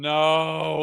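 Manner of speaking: "no" shouted out loud and high.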